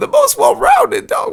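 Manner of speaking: odd unexpected voice. Mocking a claimed answer in disbelief: voice went strange. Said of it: "I don't even know how my voice just got there".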